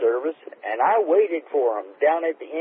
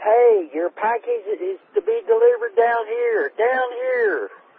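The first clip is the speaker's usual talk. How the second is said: high-pitched, far-carrying hollering scream; 9 semitones higher than usual. Retelling calling to a delivery driver up the hill: retelling own scream. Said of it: "And I'm screaming".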